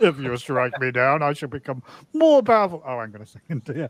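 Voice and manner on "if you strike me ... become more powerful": put-on highbrow, old-style English theatrical declaiming. Show a listener how the line was delivered, in a highbrow Elizabethan Alec Guinness impression. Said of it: "high highbrow Elizabethan acting".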